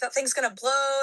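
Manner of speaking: mild, subdued yell, screaming played small. Retelling a bus wreck warning to get away: imitating Brother David screaming. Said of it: "screaming, like".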